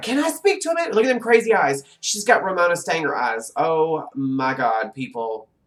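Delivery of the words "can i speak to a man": shrill, very high woman's voice. Mock a woman you find shrill by imitating a shrill woman asking for someone. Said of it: "She's shrill too, just like".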